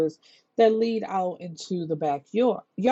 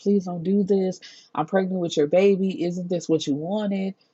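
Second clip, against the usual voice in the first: imitated, desperate, pleading tone. Retelling a film scene where a woman at gunpoint is imitating someone begging for her life. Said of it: "she's trying to beg for her life".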